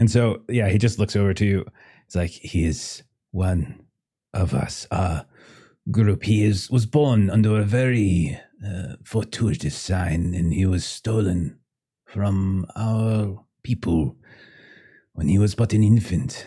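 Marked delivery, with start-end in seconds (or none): 2.3-16.5 put-on thick accent, slow and heavy English. Voicing a family member claiming a lost child: heavily accented English. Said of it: "It's very thick accent".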